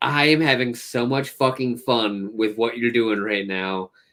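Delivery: ordinary delivery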